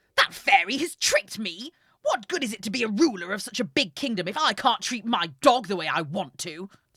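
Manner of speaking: shouting. Reading a story, the ruler cries out that a fairy tricked him: yelling. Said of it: "He yelled".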